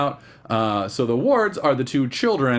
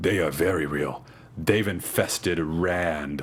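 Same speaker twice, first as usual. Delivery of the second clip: very deep, hushed voice, "Rand" drawn out; 7 semitones lower, 5 dB quieter than usual. Describing a show's opening, voicing another figure's line in a very deep voice. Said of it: "another very deep voice comes in and goes".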